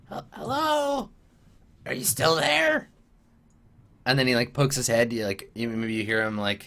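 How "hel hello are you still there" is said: squeaky, very high, slow goblin voice. Voicing a goblin calling out in a hallway: goblin voice. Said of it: "one of the goblins says, in common".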